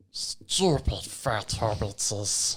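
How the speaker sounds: breathy whispered voice of a wretched cave creature. Taking turns doing impressions with friends, doing a Smeagol voice. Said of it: "I've got Smeagol".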